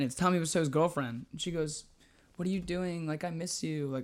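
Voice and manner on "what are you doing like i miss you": mock flirty tone, quieter. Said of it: "obviously being flirty".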